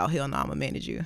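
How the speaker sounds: low, quiet, firm, flat, take-charge voice.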